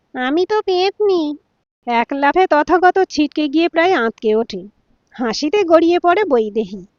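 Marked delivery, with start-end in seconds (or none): 0.1-1.3 spooky, nasal, pitched-up female ghost voice. Reading a story where a wife pretends to be a ghost: nasal ghost voice. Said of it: "নাকি সুরে বলে".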